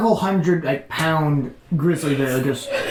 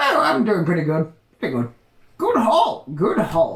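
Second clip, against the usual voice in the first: put-on swooping old prospector voice. Voicing an old gold miner greeted in the morning: old prospector voice. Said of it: "it's an old prospector. Like an old gold miner".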